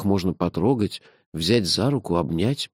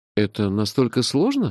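ordinary delivery

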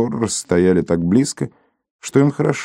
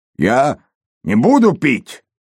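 horrified, frightened, terrified high cry; 5 semitones higher than usual. Narrator reads a man as a priest turns toward him: terrified shout. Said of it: "в ужасе крикнул Торрес".

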